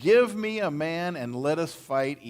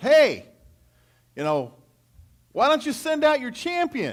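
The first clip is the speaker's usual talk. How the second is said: mock yelling, higher, louder and slower; 10 semitones higher, 5 dB louder than usual. Retelling a scene where a man out in the valley turns around, retelling a yell. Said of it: "he just yells".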